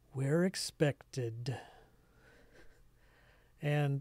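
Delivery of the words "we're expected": weary delivery, words let out on a sigh. Game master voicing a quieter character asked where they're from, sighing tone. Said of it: "say in kind of a sighing tone of voice".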